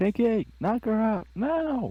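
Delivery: very high shout in a put-on voice. During a tabletop role-playing game, a player's character calls out to Pinky; in-character shout. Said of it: "I shout out Pinky".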